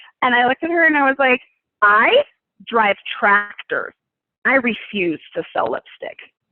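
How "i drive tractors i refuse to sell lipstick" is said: slow, rude, stuck-up, snotty tone. Retelling own reply to a job offer: imitating own rude, snotty reply. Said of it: "I was extremely rude and snotty".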